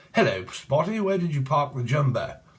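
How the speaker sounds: exaggerated, over-the-top, very posh upper-class accent. Imagining how a person could speak, in an exaggerated posh accent. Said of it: "this person could speak very posh and like".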